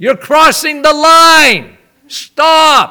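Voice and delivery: loud stern voice. Showing the voice he used on his kids when they crossed the line, loud. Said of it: "I would use my voice, right? Loud".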